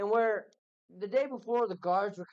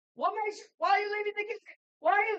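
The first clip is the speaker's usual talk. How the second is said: jumpy, agitated, very high voice, rattled-off words; 14 semitones higher, 4 dB louder than usual. Voicing a young dwarf guard who quickly draws his sword: agitated young dwarf guard. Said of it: "just calm down".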